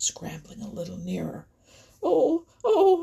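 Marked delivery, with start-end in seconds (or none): 2.0-3.0 very high, shrill, startled, frightened cry. As Buster growls and scrambles nearer, Chatterer is crying out. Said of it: "cried Chatterer".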